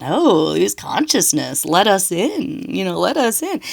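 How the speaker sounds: small, dark, sinister inner voice. Recalling an inner voice heard during convulsions, in a little dark voice. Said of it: "this other kind of like little dark voice that was like".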